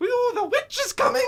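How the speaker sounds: odd, squeaky, weird, very high-pitched voice. Retelling how a film character acts after going insane: imitating a weird high-pitched voice. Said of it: "weird high-pitched voice".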